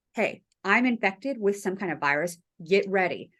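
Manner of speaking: normal talking voice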